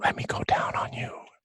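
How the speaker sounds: breathy, hushed whisper, close to the ear. A narrator voices a woman whispering into the listener's ear: whisper. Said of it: "you hear this voice whisper in your ears".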